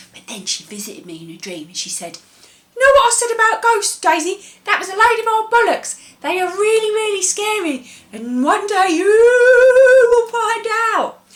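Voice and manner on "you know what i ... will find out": eerie ghost voice, very high, very loud, booming. Retelling how Auntie Jean spoke in a dream: Auntie Jean ghost accent. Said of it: "she sort of did, like, a ghost accent".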